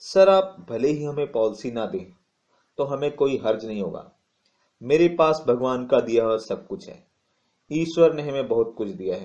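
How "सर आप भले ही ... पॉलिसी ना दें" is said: plain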